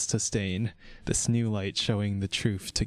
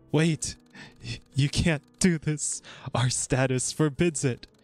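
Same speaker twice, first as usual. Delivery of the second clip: desperate, high, panicked words between gasped breaths; 6 semitones higher than usual. The last counselor, backed against a wall as death approaches, panicked and scrambling for words. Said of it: "The last counselor, now backed up to a wall, scrambles for words between panicked breaths as death approaches with measured steps".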